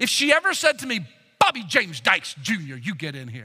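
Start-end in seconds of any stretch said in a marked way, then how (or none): 1.4-3.4 acted-out scolding, you're-in-trouble parental tone. Retelling his mother calling him by full name: imitating mother's full-name scolding call. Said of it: "I knew I was in trouble then".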